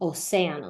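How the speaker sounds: stressed cé syllable in océano. Spanish lesson on pronouncing océano, stress on se in Océano. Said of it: "The force of the word needs to be on the sound se".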